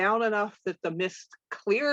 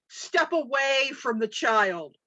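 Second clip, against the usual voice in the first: stern, authoritative commanding tone, pitched up; 5 semitones higher than usual. Focusing on the other one while playing, in a booming voice. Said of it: "in my booming voice".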